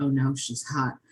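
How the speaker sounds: mock under-breath mutter. Speaker recapping a tank-missile kill, quoting her own line, retelling a remark under breath. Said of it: "say quietly under her breath".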